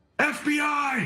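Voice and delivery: loud shouted battle cry. Shouting a battle cry in character during a fight: battle cry yell. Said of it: "I'm gonna yell out something".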